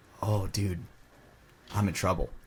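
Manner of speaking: hushed half-whisper, said as an aside. Retelling what a man half-whispered to him on the field, retelling a half-whisper. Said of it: "he like whispers over to him".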